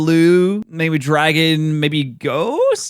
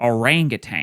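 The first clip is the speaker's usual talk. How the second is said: 'orangutan' pronounced with an American accent; 6 semitones lower, 4 dB quieter than usual. Trying out how to say 'orangutan' with an american accent. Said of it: "I'm trying to do it with the American accent".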